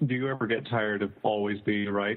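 ordinary talk, nothing marked

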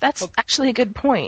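genuinely caught off guard. Reacting to another speaker's question about a book, sounding surprised. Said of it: "You sound so surprised".

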